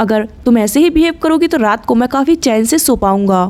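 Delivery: ordinary delivery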